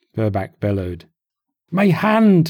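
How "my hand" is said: very high, pained, hurting moan. Moxie, his hand wounded, answers Burback: complaining. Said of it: "he complained".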